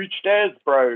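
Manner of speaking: cartoonish, over-enunciated mock New Zealand accent. Mocking an exaggerated stereotype of how Kiwis talk: caricature Kiwi accent. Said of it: "not every Kiwi walks around going".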